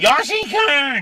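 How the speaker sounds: very high, horrible, shrill screeching scream. Imitating what you suddenly hear in a park, in a horrible screaming voice. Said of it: "this horrible voice".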